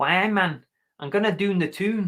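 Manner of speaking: attempted put-on accent that comes out Scottish. Trying to do an accent on request, in a put-on accent sounding Scottish. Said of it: "It still sounds Scottish".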